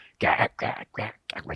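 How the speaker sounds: soft, whispered, croaking frog noise.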